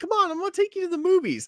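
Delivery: very high, bright motherly voice. Imitating a mom inviting a five-year-old to the movies: imitating a mom. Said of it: "your mom or your aunt's like".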